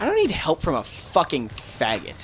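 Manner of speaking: usual speaking voice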